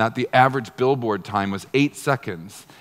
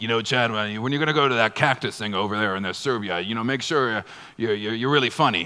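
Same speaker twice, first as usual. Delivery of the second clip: halting, rambling executive voice. Imitating how a CEO talks when giving advice: imitating Alex Zuber. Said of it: "He kinda talks like this".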